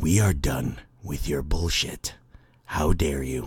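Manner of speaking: very low, seductive put-on sexy bedroom voice. Scolding someone they are talking about, the speaker breaks out a mock sexy voice. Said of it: "I'm breaking out the sexy voice".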